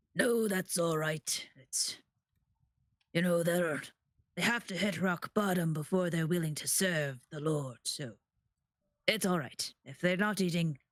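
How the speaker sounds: rough-edged, gruff speaking voice. Retelling what an overheard voice said: gruff voice. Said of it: "You hear a gruff voice like".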